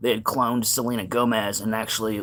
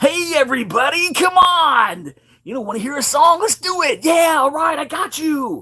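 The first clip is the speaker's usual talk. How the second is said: put-on very high, loud, bouncy, hyper-excited kids' host voice; 6 dB louder than usual. Showing a comedy skit character who greets everyone: overly excited character voice. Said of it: "an overly excited".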